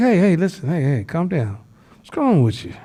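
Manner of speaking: easy, soothing, placating, calming voice. Speaker acts out answering someone screaming at you, acting out calming someone down. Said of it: "you be like".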